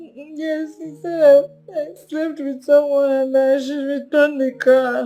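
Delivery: high, tearful crying voice, talking through tears. Telling a caller on the phone about being hit: crying while talking. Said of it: "Are you crying?".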